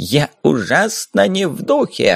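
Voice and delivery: very slow, arrogant, haughty drawl. A drunk mage, getting up off the floor after being told to leave, arrogant. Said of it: "заносчиво сказал маг".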